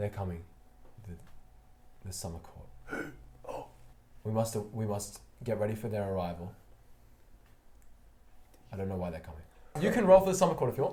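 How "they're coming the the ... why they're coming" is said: barely voiced, breath-only, hushed whisper. Voicing a character in a game who beckons the player over; whispering. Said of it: "He's whispering".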